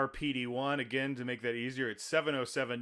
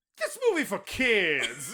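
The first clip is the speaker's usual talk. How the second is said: put-on high, swooping sing-song voice, kids stretched out; 6 semitones higher, 4 dB louder than usual. Retelling what a woman behind them in the theater said: imitating a woman's voice. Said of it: "I'm just trying to imitate her voice".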